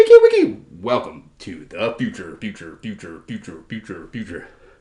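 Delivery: very low, swooping ai commentator voice. Commentating a match, the speaker slips into an AI commentary voice. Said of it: "This is the A I commentary voice".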